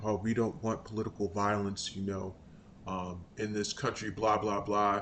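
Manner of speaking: soft, low mocking mimicry.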